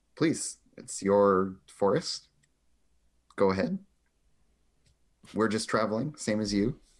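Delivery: confidential, half-hushed, lightly hushed tones. Speaking in character, asking a forest creature to let them pass: hushed tones. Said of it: "in very, like, hushed tones".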